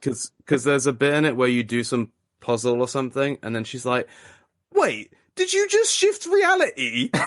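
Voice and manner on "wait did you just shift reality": put-on very high, swooping, ugly British woman accent. Quoting a woman from a puzzle game, in an unappealing British woman voice. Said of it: "the like unappealing British woman voice".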